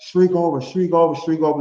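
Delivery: put-on enthusiastic wrestling announcer voice. Describing how Michael Cole usually calls WrestleMania matches: imitating Michael Cole's enthusiasm.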